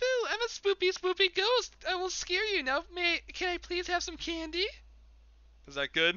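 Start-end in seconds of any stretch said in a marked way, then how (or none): 0.0-4.6 very high-pitched put-on little girl voice. A streamer takes a voice request and answers in a high-pitched little girl voice. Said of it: "In a high-pitched girl- little girl voice".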